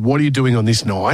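ordinary talk

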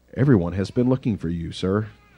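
mock-deadpan voice, low and soft. Imagining how the man in the story probably said it, imitating a deadpan delivery. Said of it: "is that the way that he probably said it in just deadpan?".

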